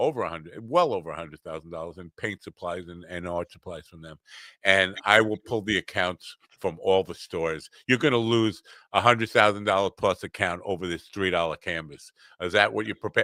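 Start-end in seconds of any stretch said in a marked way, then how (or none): none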